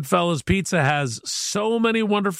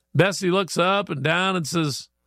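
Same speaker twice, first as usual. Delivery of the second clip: plain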